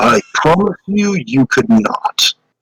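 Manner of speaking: ancient dragon creature voice. Game master voicing a creature answering a player, deep booming voice. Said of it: "in a deep, booming voice".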